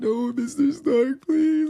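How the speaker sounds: very high, loud, snotty, drawn-out crying plea. Describing a movie death scene, the speaker acts out the crying plea; imitating Peter Parker crying. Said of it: "Peter is like crying, saying like".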